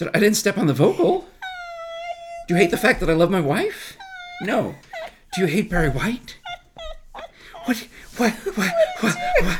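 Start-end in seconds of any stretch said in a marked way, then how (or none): 7.6-9.6 hyperventilating panic, very high, swooping panicked whats. Retelling reacting to a friend's text: retelling hyperventilating panic. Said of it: "I start hyperventilating".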